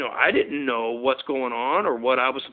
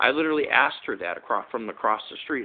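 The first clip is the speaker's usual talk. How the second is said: usual speaking voice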